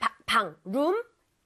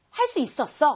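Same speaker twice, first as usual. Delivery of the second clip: normal talking voice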